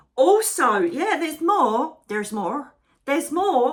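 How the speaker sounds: put-on stage Irish accent. Quoting an Irish comedian while announcing more news: imitating an Irish comedian. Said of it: "an Irish comedian".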